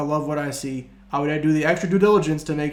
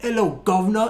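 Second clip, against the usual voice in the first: clumsy fake British accent, pitched up; 5 semitones higher than usual. Quoting a baking show's hosts saying hello, in a bad British accent. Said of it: "That was a bad British accent".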